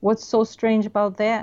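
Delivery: plain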